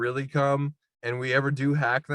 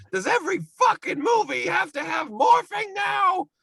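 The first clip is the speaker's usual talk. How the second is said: put-on complaining comedian voice, higher pitch. Doing a bad impression complaining about a Terminator movie scene: Gilbert Gottfried impression. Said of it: "I need Godfrey complaining like".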